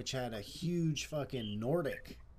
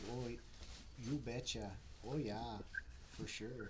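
put-on Minnesota accent with upper-Midwest vowels; 9 dB quieter than usual. Comparing Canadian and Minnesota accents, the speaker demonstrates a Minnesota accent. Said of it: "the Minnesota's more like".

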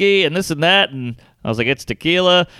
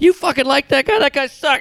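play-acted, high-pitched drunken heckling shouts, back and forth; 9 semitones higher than usual. Retelling a loud argument about comedy in a garden: imitating their own screaming. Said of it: "We're screaming".

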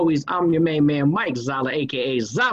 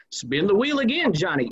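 put-on aging game show host delivery; 5 semitones higher than usual. Speaker imagines their retirement years, doing an old game show host voice. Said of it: "I'm going to be like an old game show host".

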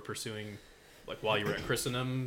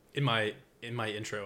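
ordinary talk, nothing marked

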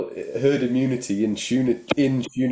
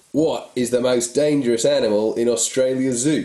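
put-on Aussie Australian accent. Telling a listener's string joke on the show: Aussie voice. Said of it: "I'll do it in an Aussie voice".

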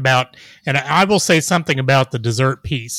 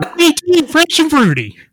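put-on western character voice, pitched much higher; 4 dB louder than usual. Showing how to say a cereal name with manliness, say it like Festus from Gunsmoke. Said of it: "if you said it like Festus on Gunsmoke".

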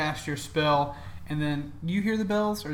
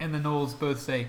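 ordinary talk

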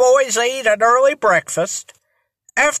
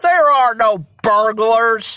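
ordinary delivery

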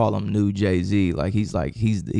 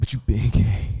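heavy, breathy, breathed-out delivery. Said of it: "she be breathing like".

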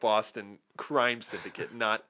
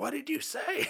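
very high, frantic, desperate shout of disbelief; 4 dB quieter than usual. Speaker describing a film scene, retelling Leo's desperate yell. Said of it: "He's like yelling at the guy".

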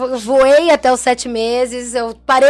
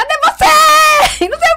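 put-on high-pitched, shrill, loud yelling; 4 dB louder than usual. Retelling being stuck in a fallen elevator, quoting the women searching for them, retelling a yell. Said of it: "eu escutava elas berrando".

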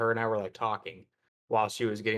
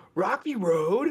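very high, really loud, blaring blurt; 10 semitones higher, 3 dB louder than usual. Retelling what a mom's boyfriend said at the ice cream line: imitating someone saying it really loud. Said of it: "Like, really loud".

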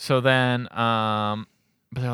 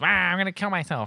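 put-on dumb baby voice; 6 semitones higher than usual. Retelling a film scene where Boss Baby goes into full baby mode. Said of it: "full baby mode where he's just a dumb baby".

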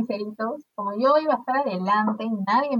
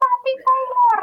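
mock very high, loud shriek; 5 dB louder than usual. Retelling a concert where a friend yelled at the guitarist: imitating a friend screaming. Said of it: "mi amiga empieza a gritar".

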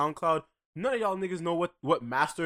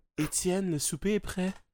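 mock quiet, soft, polite put-on voice; 2 semitones higher than usual. Mocking a friend who complains of loud talk: mock quiet polite talking. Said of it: "let me talk to you the way you wanna be talked to".

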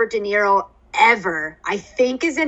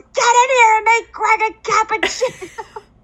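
higher-pitched angry yell; 12 semitones higher than usual. Retelling a favorite movie scene, imitating Robert De Niro yelling. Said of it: "the way he yells".

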